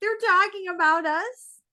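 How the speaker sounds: shrill, high, embarrassed, upset half-yell. Retelling how a roommate yells at Kyle after crying: imitating Amanda yelling. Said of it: "kinda yells at Kyle".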